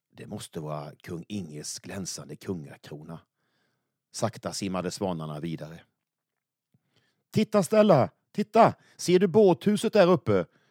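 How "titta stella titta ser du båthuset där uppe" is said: very high, raised voice calling out. As the swans swim on, a character calls out to stella: calling out. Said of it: "Ropade Semlan".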